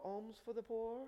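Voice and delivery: put-on touch of British accent. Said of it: "with a little bit of a British accent".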